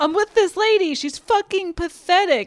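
mock screaming, loud and high. Retelling a movie scene where a man screams an insult: imitating someone screaming. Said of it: "he's screaming loudly in an open room".

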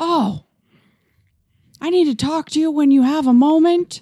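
calling out loudly, high. Retelling how someone called through the door: imitating someone yelling through a door. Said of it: "keep yelling at me through the door".

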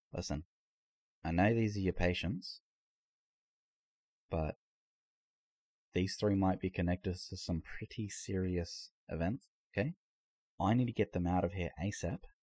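quiet, hushed voice. Voicing the sheriff taking the doctor aside: very hushed tone. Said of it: "in a very hushed tone".

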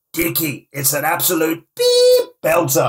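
high, drawn-out put-on little voice. Retelling what a man said on seeing it on a light box, in Marcello's little voice. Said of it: "in his little voice he goes".

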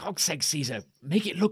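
whispering in a character voice. Whispering to Caesar while passing during a staged sword fight: whispering in character. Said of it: "I'm just gonna whisper".

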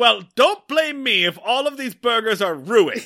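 loud, high-pitched holler. Retelling how a man stormed out of the cabin, retelling a yell. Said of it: "he just kind of yells like".

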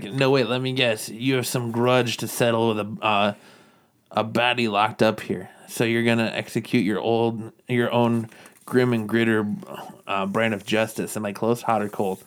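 ordinary talk

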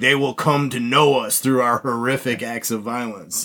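normal talking voice

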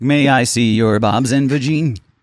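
put-on Indian-accented text-to-speech voice. Joking about a device plugged into the spinal cord, in an Indian Stephen Hawking voice. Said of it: "Indian Stephen Hawking".

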